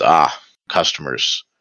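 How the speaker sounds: listless, dull, flat monotone. A shopkeeper behind the counter glances up at arriving customers, in a dull voice. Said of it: "in a dull voice says".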